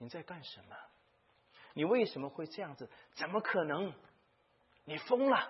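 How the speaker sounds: high-pitched shocked crowd outcry of disbelief.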